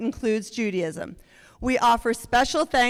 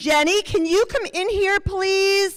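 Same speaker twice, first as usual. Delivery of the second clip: high-pitched urgent calling; 9 semitones higher, 3 dB louder than usual. Retelling a call from the kitchen to cousin Jenny: imitating Joan yelling. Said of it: "we hear Joan yell from the kitchen".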